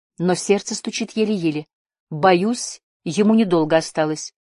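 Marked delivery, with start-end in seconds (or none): none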